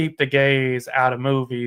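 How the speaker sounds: ordinary talk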